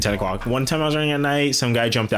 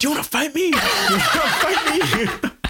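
put-on, very high-pitched, squeaky, confrontational voice. Retelling a man screaming at the speaker after a fall, retelling a scream. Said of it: "Just screaming at me".

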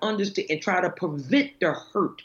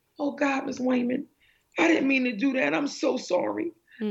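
put-on weepy, remorseful, tearful crying child voice; 6 semitones higher than usual. Retelling what remorseful students said to her, imitating a crying student. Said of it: "they would cry actually".

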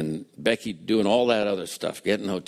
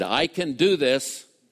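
mock deliberate, slow, pitched-up declaring tone; 6 semitones higher than usual. Retelling what a man said aloud while walking out: imitating a loud voice. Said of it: "in a loud voice as he walked out said".

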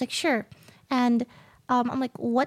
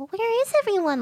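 put-on scared little girl voice, much higher; 7 semitones higher than usual. Showing a line she voiced for a game character, scared little girl voice. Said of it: "scared little girl sort of voice".

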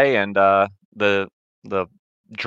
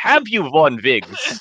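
very fake German accent, pitched higher; 3 semitones higher than usual. Retelling an interview, quoting Dominic Monaghan's question in a very fake German accent. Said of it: "with a very fake German accent".

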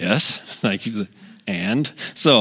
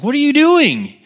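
mock angry, very high-pitched, raised voice; 5 dB louder than usual. Retelling how a neighbor came out while weeding: imitating someone being mad. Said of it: "she's mad".

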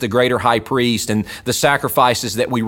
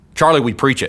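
usual speaking voice

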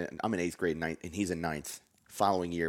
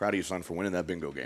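usual speaking voice

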